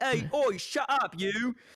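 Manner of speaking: very slow, drawn-out, put-on English accent. Recalling telling a squeaky-voiced kid to shut up, in an english accent. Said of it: "in an English accent".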